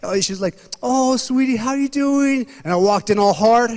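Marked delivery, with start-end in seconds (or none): 0.8-2.5 put-on sweet little old lady voice, pitched up. Retelling how the church usher greeted him: imitating a sweet old grandma. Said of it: "old sweet little grandmas".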